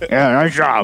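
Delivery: put-on big, booming voice. Retelling how a quarterback compliments hitters: imitating Andrew Luck's booming T-Rex voice. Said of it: "this big booming, like, T-Rex voice".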